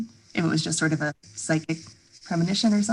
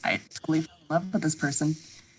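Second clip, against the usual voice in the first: ordinary delivery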